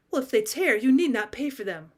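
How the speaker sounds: ordinary delivery, nothing marked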